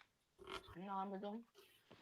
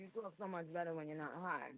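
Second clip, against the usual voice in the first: usual speaking voice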